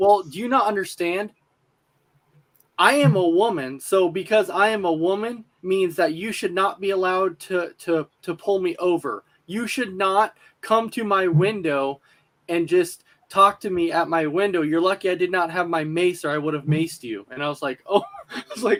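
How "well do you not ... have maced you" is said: usual speaking voice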